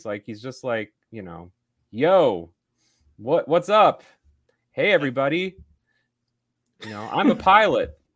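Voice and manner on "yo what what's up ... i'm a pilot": loud, slow, drawn-out casual bro voice. Mocking an actor's casual line delivery in a period film: Glen Powell impression as casual bro. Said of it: "he's the bro from Everybody Wants Some".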